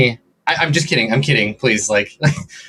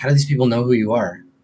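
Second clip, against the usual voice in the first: whispering, much faster; 2 semitones lower than usual. Voicing a character who whispers to Navarre: whispering. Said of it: "he whispers to you".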